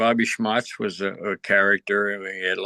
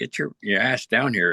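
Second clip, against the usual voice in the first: usual speaking voice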